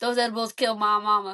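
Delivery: jokey, put-on country accent. Showing a running joke shared with a boyfriend, in a put-on country accent. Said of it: "Like we do a country accent".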